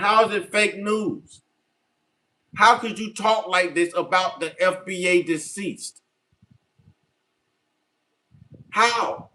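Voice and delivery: angry, mad, heated, demanding tone. Speaking to viewers after insisting he is real: angry. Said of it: "Why are you so mad?".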